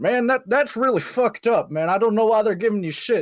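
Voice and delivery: thick put-on Southern accent. Retelling what a neighbor says: imitating a strong southern accent. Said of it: "also has a strong Southern accent, being like".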